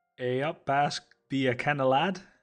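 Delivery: loud, poor Geordie accent that slides into Scottish. Trying a Geordie accent after admitting they can't do one, bad Scottish-sounding accent. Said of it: "Again, sounded a bit Scottish".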